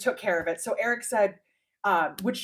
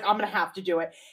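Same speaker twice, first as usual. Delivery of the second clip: mock-sarcastic tone, faster and lower; 4 semitones lower than usual. Retelling own past remark after a hire bailed, retelling a sarcastic remark. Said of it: "it was just sarcastically".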